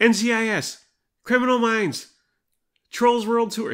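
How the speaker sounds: shrill, very high, very loud hollering. Describing scrolling past streaming tiles while Lennox shouts, retelling a shout. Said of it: "Lennox shouts".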